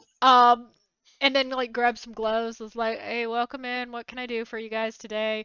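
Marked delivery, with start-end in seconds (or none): 3.0-5.4 flat, dead-level, complete monotone. Describing a tired counter worker greeting customers, imitate them in a complete monotone. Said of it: "Like complete monotone".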